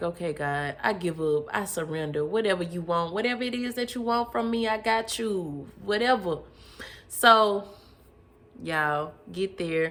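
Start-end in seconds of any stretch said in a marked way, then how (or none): 0.0-6.4 tearful, sobbing, resigned, giving-up tone. Retelling crying while driving and praying to god: retelling own crying prayer. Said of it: "Y'all just crying like".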